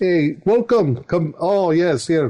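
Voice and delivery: slow, played-up Eastern European accent. Showing how the taxidermist's wife and daughter talk; Eastern European accent. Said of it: "They talk like this".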